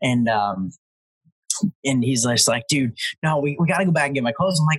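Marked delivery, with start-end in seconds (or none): 2.7-4.6 mock panicked, worked-up, frantic freaked-out pleading tone. Retelling what a friend said: imitating someone freaking out. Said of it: "freaking out".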